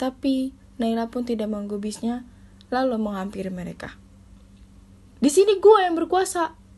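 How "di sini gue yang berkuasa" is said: growing irritation, annoyed, raised and pitched up. Bian, a senior, answers a student who interfered, increasingly annoyed. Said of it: "ucap Bian yang makin kesal".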